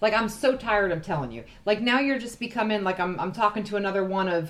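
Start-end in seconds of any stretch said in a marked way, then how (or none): none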